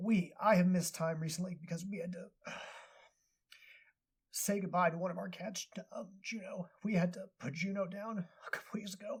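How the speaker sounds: fighting to hold back tears, voice riding high. Telling listeners about having to put down the cat juno, holding back tears. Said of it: "I will try to get through this without getting too emotional".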